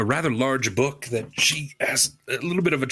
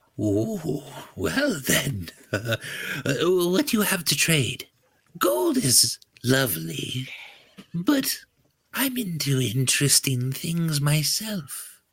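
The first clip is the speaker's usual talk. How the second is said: put-on elderly gnomish woman voice, in character; 3 semitones higher than usual. Game master playing an old gnome trader asking what the party will trade, old gnome woman voice. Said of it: "I don't mind Viscera as much as the next old gnomish woman".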